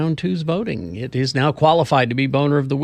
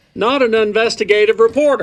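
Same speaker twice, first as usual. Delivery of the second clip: shouted news reporter voice, higher and louder; 7 semitones higher, 5 dB louder than usual. Acting out the undercover reporter in disguise: Rod Decker voice. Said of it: "But he would still talk like this".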